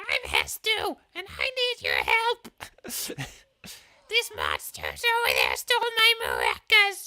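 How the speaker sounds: very high, loud, swooping, sing-song toad voice, slow. Voicing the character Hestu asking for help: Hestu toad voice. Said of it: "a toad voice or something like".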